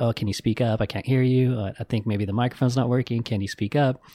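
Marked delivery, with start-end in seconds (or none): none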